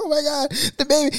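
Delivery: crying out in very high-pitched panic. Retelling the panic when the baby first rolled: imitating Ivory crying, panicked. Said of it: "She started crying".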